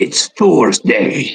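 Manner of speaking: slow, drawn-out mock Viking accent.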